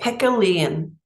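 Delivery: put-on Irish accent. A coach giving a clinic, stating a key point in an Irish accent. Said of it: "I hope you heard that in my Irish accent".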